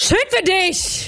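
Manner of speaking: acted shocked shout. In an emotion-acting game, speaker performs the first emotion, shocked, shouting. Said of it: "die erste Emotion ist schockiert".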